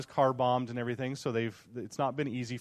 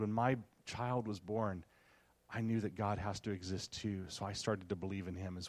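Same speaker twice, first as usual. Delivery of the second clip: put-on hushed, lowered voice, quieter; 4 semitones lower, 8 dB quieter than usual. Retelling a woman's answer to a question, imitating her lowered voice. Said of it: "she lowers her voice and looks around".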